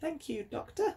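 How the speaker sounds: put-on, bad, terrible, very high-pitched posh voice. As the Queen thanks the Doctor for saving the day, do a terrible posh impression of the Queen. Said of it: "That's a terrible impression. That tried to sound like posh and well-spoken".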